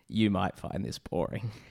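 put-on dull hungover voice. Speaker mimics what Alex said about the episode: imitating Alex's dull tone. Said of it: "as he says in the most dull tone you can imagine, this hungover voice".

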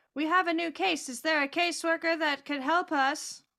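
very loud, high-pitched call at full volume. Walking down a hallway with companions in a role-play, calling out very loudly. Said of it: "I am going to very loudly say".

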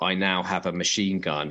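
ordinary delivery

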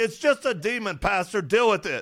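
put-on loud yelling. Retelling how a wife yelled across the room to a pastor: imitating wife yelling. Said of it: "my bride from across the room yells".

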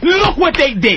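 angry, betrayed ranting.

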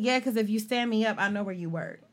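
ordinary delivery

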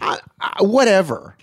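shrill, very high yelling outburst. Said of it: "What are you yelling for?".

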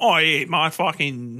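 attempted British accent that sounds Australian, slow. Showing how an actor does not sound: put-on accent that came out Australian. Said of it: "that's Australian".

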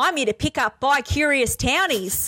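broad put-on Australian accent. Performing a scene, giving the character Buttercup a really bogan Australian accent. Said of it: "That in an Aussie accent was the perfect thing".

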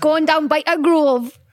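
put-on slow, high-pitched broad Geordie accent. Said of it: "No, I say".

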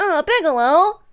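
whining, pitched way up high. Talking about favorite characters to imitate, doing a whiny Gohan impression. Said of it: "it's just so whiny".

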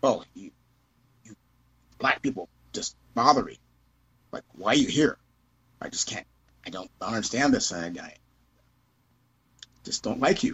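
voice full of open disgust and contempt. Retelling what a lady coming out a front door said, imitating her disgusted voice. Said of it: "the kind of the disgusted voice".

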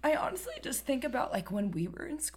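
voice going squeaky with tears. Talking about the fear of him starting school, starting to cry: squeaky crying voice. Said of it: "getting squeaky".

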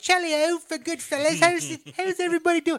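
fake British accent. Imitating the main girl whose accent keeps slipping, in a bad British accent. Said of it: "British. She keeps coming in and out".

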